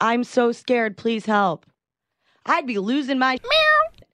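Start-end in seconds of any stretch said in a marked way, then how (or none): 0.0-1.6 mock calm, unscared delivery. Repeating a caller's plea for help: imitating a caller who sounds calm. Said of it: "She doesn't sound scared. She says".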